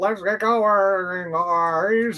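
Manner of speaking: put-on gurgling voice. Recalling a cartoon character's lines: imitating Sea Spray's gurgling voice. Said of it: "he had a voice that gurgled".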